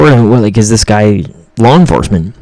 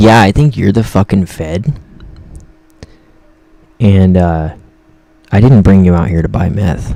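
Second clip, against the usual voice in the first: put-on quiet, sinister, menacing tone; 3 semitones lower than usual. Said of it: "he went real quiet".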